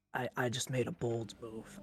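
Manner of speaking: whispered, in a character voice. Speaking in character to a party member during the game: whispering in character. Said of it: "I whisper to him, and I go".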